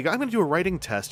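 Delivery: very quiet, calm voice, said quickly. Imitating journaling YouTubers starting a pen writing test, very quiet calm voice. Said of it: "speaking in a very quiet, very calm voice".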